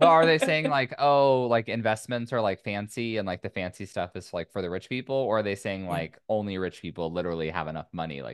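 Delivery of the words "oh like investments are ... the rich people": ordinary delivery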